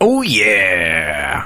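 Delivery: put-on mascot character voice with drawn-out yeah. Trying an impression after mentioning its voice actor: Kool-Aid Man voice. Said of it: "let me try".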